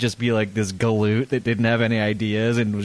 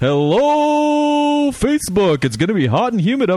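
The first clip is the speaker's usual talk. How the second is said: radio weather announcer voice, much higher, louder; 12 semitones higher, 5 dB louder than usual. Trying out a greeting, in a morning radio weather guy voice. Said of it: "He's the weather guy".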